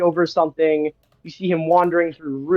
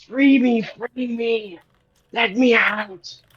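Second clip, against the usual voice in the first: hoarse, rasping voice, pitched high; 6 semitones higher than usual. Narrating a voice that breaks through into your mind: raspy voice. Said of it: "you hear this um raspy voice say in your mind".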